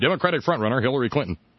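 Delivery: several words run together as one. Showing how newscasters now say the phrase: words run together as one title. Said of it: "You can hear the hyphens in the newscaster".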